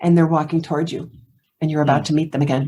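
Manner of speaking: soft close whisper. Retelling a question whispered close in the ear: imitating Leonard Nimoy whispering. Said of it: "he whispers in my ear".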